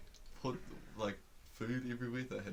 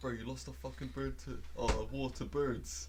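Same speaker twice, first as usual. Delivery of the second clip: usual speaking voice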